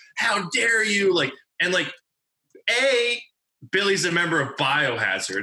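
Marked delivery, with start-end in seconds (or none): 0.2-1.2 outraged, furious yell, pitched high. Retelling someone laying into the promoters: imitating a furious yell. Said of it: "And he was furious".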